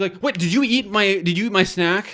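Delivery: loud, exasperated, fed-up ranting. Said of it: "then you're just like".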